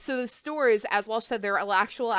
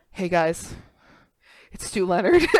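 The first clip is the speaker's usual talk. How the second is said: play-acted sad, shaken, loud, upset radio-ad voice; 2 semitones lower, 5 dB louder than usual. Describing a grocery store owner's summer radio ad, imitating Stu Leonard sounding sad. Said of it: "being very audibly sad and disrupted and upset".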